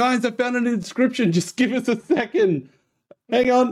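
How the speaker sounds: shrill, very high shouted scream. Voicing a character who finds an inscription during a fight: screaming. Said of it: "she screams out".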